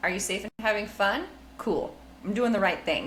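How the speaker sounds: ordinary talk, nothing marked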